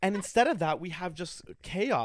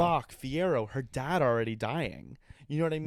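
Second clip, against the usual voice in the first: plain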